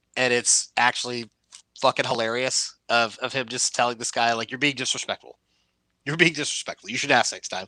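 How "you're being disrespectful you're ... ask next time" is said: pointed, politely stern, passive-aggressive lecturing tone. Retelling a video of John Cena answering a live-streamer: imitating passive-aggressive John Cena. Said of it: "passive-aggressive ... version of John Cena".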